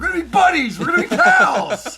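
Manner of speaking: high-pitched holler at full blast. Joking about wanting to join a ballplayer's routine: Matt Foley impression. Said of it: "it's almost like the Matt Foley".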